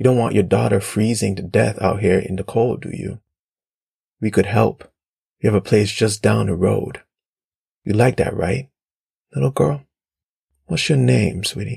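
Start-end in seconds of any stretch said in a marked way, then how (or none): none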